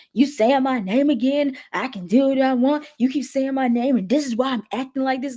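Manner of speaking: worked-up, confrontational put-on yelling outburst, heated. Retelling how a calm talk turned loud: imitating Dez yelling. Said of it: "Dez immediately gets loud, gets very, very loud".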